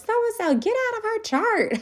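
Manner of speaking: shrill, very high shouted call. Retelling how a lady yelled up front to a coworker: imitating someone yelling. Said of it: "she yells up front".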